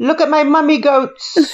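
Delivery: put-on Indian accent. Joking around in a group, in an Indian accent. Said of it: "Why did you say it like you're an Indian person?".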